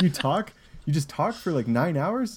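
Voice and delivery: high disbelieving voice.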